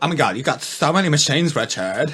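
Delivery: put-on Valley Girl accent. Imitating what she said: valley girl voice. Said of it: "when did she become Valley Girl?".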